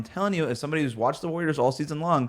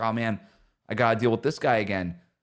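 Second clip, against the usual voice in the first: put-on muttering under breath, lower pitch; 4 semitones lower than usual. Retelling a famous finals video, muttering under the breath like LeBron. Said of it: "he just starts cursing under his breath".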